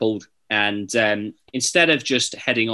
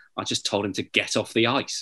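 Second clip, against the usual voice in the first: quiet, flat, dry, expressionless deadpan; 5 dB quieter than usual. Retelling a man's answer to the press after a scrap, retelling a deadpan reply. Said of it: "in a very kind of deadpan way".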